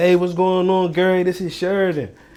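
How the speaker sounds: familiar, easygoing, casual friendly tone. Showing how he answers the phone to a caller: acting familiar with the caller. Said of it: "I talk to them in the tonality of somebody that's familiar with them".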